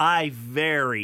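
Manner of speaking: deliberately slowed, measured delivery. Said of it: "listen, listen to this".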